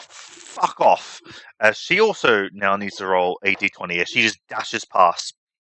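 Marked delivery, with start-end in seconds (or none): 0.0-1.2 light, mild yell held back, in character. Her character dashes past the others, yelling. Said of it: "she's going to yell".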